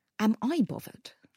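heavy stress, all the weight on "I". Retelling what someone said in a room, with stress on I. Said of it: "He was going like that. Stressing the personal".

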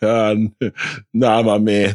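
play-acted bashful, sheepish, stumbling, slow delivery. Retelling turning down a stranger in the snack aisle: imitating a sheepish refusal. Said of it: "I put my hand up sheepishly like".

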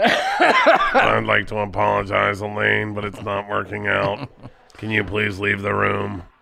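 low, slow, creaky voice, dragged out. Breaking the news to his first wife that it's over: Stephen Hawking voice. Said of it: "do your impression of Stephen Hawking's".

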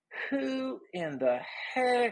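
very high, very slow southern drawl. Retelling what a security guy said to the crowd: imitating a southern accent. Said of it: "he goes in a very southern way".

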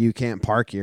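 plain

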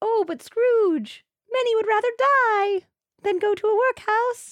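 very high, loud puppet character voice. Retelling a Muppet version scene, the charity askers answer Scrooge in a Muppet voice. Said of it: "That's my Muppet voice".

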